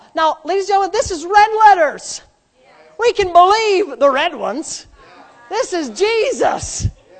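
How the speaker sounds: sarcastic, high pitched and loud. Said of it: "That's sarcasm".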